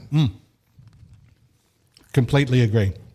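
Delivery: muffled speech with mouth full, chewing. Asked whether he agrees about Kyle, answering: talking with mouth full. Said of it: "now I've got a mouthful of pizza".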